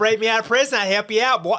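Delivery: shouted in a bad, shrill, loud Boston accent. Telling a co-host about a watchable show, act out a part in a bad Bill Burr Boston accent. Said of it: "Boston accent come in".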